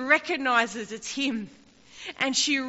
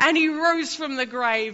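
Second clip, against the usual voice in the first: ordinary delivery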